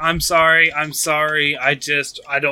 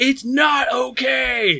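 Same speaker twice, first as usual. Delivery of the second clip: high in-your-face scream, okay drawn out; 9 semitones higher than usual. Voicing a character answering a comforting line: screaming in your face. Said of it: "he just screams in your face".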